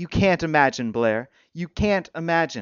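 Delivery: ordinary delivery, nothing marked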